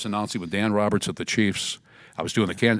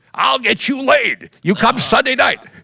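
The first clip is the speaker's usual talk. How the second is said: shrill, loud, full-voiced, very high booming voice; 9 dB louder than usual. [name] retells Rufus inviting him to his new bar, imitating Rufus. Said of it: "He talked like this".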